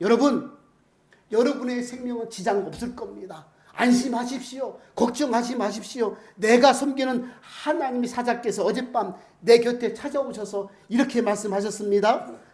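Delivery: loud, ringing call.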